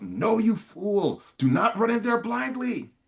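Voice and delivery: very high, drawn-out shouted yell. Voicing a character warning a player who runs off: Dragon Hunter yelling. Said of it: "the Dragon Hunter's going to yell out".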